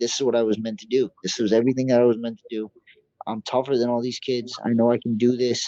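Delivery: ordinary talk, nothing marked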